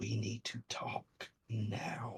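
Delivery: disembodied, very soft whisper, barely audible. Game narrator voicing a voice the players hear, whispering voice. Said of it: "You hear a whispering voice".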